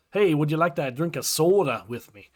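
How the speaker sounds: Minnesotan way of talking. A Kansas City resident imitates how people up north talk: Minnesota accent. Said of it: "they all talk like Minnesota".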